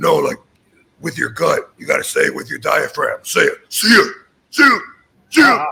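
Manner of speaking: gravelly, rough, raspy voice from the gut. Retelling how a wrestler taught a goodbye: imitating Tom's raspy voice. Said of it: "he had a really raspy voice".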